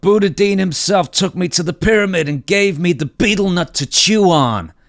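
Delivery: put-on wrestler voice. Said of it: "with that thick Boston accent".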